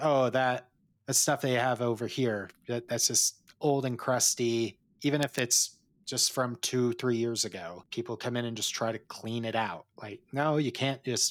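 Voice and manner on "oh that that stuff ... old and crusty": ordinary talk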